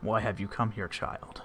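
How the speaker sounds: rough, gruff, deep creature voice. A voice speaks directly into the listener's head, gruff and deep. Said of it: "in this sort of gruff, deep voice".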